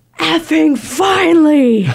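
put-on, high, screamed, let-loose outburst. Recalling their reaction when game rules were explained, retelling a scream. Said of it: "I just screamed".

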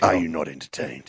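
very low, quiet, hushed movie-star voice. Joining in after another player, the speaker does a Russell Crowe impression. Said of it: "Sound like Russell Crowe".

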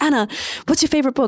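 high, fast, pushy, pestering voice. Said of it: "They were like".

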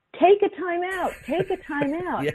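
very high, frantic, urgent scream, acted out. Retelling watching the game end and screaming at the coaches: retelling own screaming. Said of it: "I'm screaming".

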